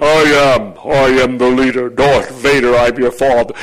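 deep villain voice, rising, words stretched out. Coaching an audience to say a phrase, demonstrating it in a deep voice. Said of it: "say it with a deep voice".

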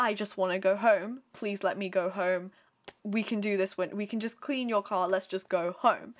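put-on pleading, begging voice. Retelling a character's request in a plot summary: imitating someone pleading. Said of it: "she's insisting, literally, like, begging".

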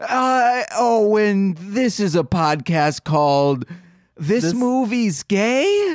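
feigned, fumbling bewilderment. Redoing the show's intro and deliberately messing it up: pretending to be confused. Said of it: "I purposefully was messing up".

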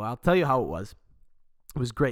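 normal talking voice

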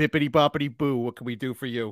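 loud, fake Boston accent. Playing the fairy podfather offering help; put-on Boston accent. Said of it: "we went the Boston accent".

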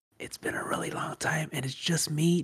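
soft, unvoiced ASMR whisper.

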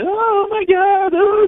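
put-on very high, loud, slow girlish scream. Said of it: "they're just all screaming".

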